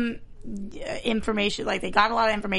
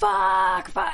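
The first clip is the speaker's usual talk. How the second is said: put-on shrill, very high, full-lungs scream; 10 semitones higher, 3 dB louder than usual. Recounting a woman the speaker identifies with, swearing: imitating screaming at top of lungs. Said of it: "just screaming top of her lungs".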